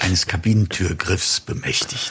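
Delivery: hushed, half-confessing whisper. Finishing a story for the others, spoken as a whisper. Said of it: "Ich flüstere es".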